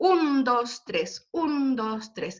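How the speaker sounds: dactylic beat counted out, stress on each un. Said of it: "Ese es el ritmo del dactílico".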